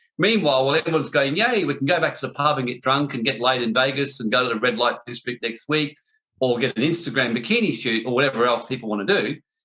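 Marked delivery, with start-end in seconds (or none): none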